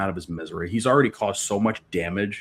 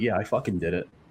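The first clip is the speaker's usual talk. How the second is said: put-on chest-puffed, defiant tone. Acting out a character's reply after she puffs her chest up: imitating a chest-puffed defiant reply. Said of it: "She puffs her chest up slightly".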